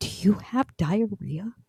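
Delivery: hushed, whispered words. Husband retelling his wife's question in the back seat, imitating a whisper.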